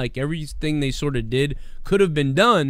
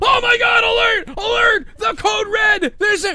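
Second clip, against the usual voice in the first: very high, loud mock panicked yelling.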